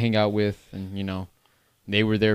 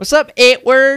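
put-on Southern accent; 13 dB louder than usual. Imitating a friend saying the speaker's name: imitating D's Southern accent. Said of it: "it's like Southern and brother accent".

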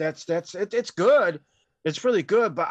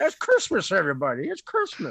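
put-on old-film leading-man voice with wide pitch swings. Trying a quick Jimmy Stewart voice while discussing a classic movie. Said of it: "Do his voice".

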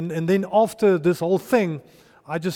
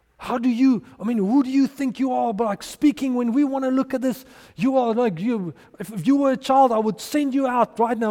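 mock high-pitched screaming; 6 semitones higher than usual. Retelling how a team manager screamed at him in public: imitating someone screaming. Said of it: "he started screaming at me in front of everyone".

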